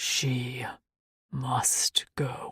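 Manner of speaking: low, deep, lion-like rumbling near-growl. Reading a creature's line in a story: deep voice like a lion's growl. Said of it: "In a deep voice that felt one step above a lion's growl".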